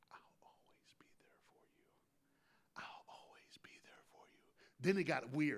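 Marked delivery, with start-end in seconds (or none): 0.1-4.4 very quiet repeated whisper, swelling a little. On stage, you retell how a father repeated a phrase to his sleeping son, retelling a whisper. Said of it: "That's scary voice".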